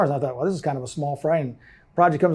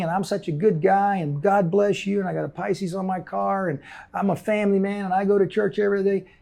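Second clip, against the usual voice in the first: put-on Texas twang accent; 3 semitones higher, 3 dB quieter than usual. Describing how promoters and crooks talk to busy people, in a put-on Texas twang. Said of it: "they drop into that Texas twang".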